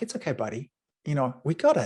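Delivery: loving, affectionate voice. Showing how they talk to their inner voice: loving, as to a small child. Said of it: "talk to it like it's a two-year-old".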